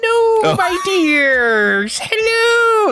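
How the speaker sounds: very high-pitched, loud, every word drawn out. Showing the voice he gives a character for his players, Mrs. Doubtfire voice. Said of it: "Missus Doubtfire voice".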